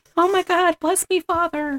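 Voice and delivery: put-on squealing, very high, panicked freak-out. Describing a movie scene where the native girl freaks out, imitating a girl freaking out. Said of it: "she's going freaking out".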